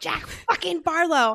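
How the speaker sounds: acted high yell. Retelling slamming a book shut and walking around the house: imitating own yelling. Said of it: "just yelling".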